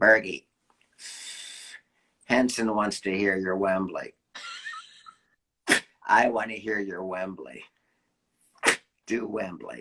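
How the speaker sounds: low, raspy smoker's voice. A speaker retelling what Stu told him, in Stu's raspy smoker voice. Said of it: "he smoked and he talked like this".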